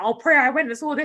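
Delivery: very loud, high-pitched screaming outburst. Retelling what the speaker's dad says, imitating dad screaming. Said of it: "he's like screaming about".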